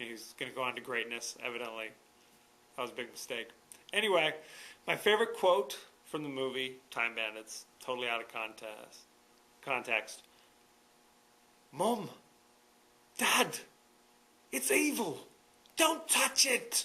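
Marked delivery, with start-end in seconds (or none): 11.7-16.8 horrible put-on English accent, very slow, high. Quoting a favorite movie line out of context, in a bad English accent. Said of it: "forgive my horrible English accent".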